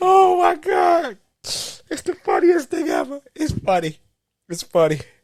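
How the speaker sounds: very high, talking through laughter. Reacting to a tragic movie scene: laughing while talking. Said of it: "I can tell you laughing at tragedy".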